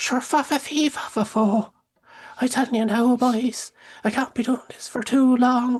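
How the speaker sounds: over-the-top bad Irish accent, very high. Mimicking a guy's Irish cleric character from his game episodes: horrible Irish accent. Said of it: "the accent".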